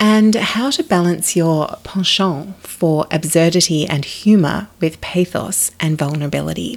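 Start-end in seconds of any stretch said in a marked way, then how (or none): 1.8-2.5 penchant said in a botched French accent. Talking about writing, slipping in a French word: French accent on penchant. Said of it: "I was saying penchant with a French accent and completely stuffing it up".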